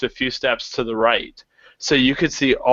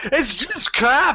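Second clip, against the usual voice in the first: put-on Scottish accent pitched high; 12 semitones higher than usual. Playing the harsh reviewer of a photo: Simon Cowell impression, Scottish accent. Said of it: "I don't know why that was a Scottish accent".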